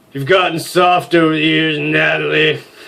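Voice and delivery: bombastic douche voice. Voicing a douche who greets Natalie, the speaker uses a douchey voice. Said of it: "He needs an appropriate douchey voice. / You already know [name]. / Is [name] smiling? / No, he needs something more bombastic".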